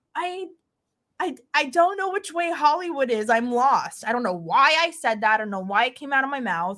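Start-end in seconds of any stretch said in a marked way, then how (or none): 0.1-4.0 crying hard, sobbing through every word. Retelling stopping at a police checkpoint as a lost driver, retelling own crying. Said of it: "I pull up and I'm bawling, crying".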